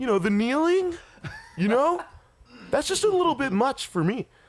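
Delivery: put-on very high-pitched California dude accent. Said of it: "That's my, uh, what's it, [name]".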